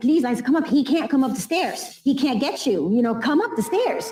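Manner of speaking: put-on scream. Telling of a bleeding woman crawling up the stairs, the speaker acts it out: retelling a scream. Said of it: "And I'm screaming".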